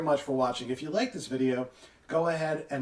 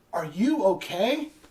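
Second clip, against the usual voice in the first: mock, raised, high-pitched shout; 5 semitones higher than usual. Retelling a friend shouting to a person hit by her car: imitating someone shouting. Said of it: "She shouts out".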